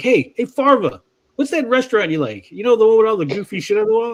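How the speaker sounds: offhand, baiting, casual, slightly high voice. Retelling a Super Troopers scene, imitating the officers tricking Farva. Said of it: "They're like".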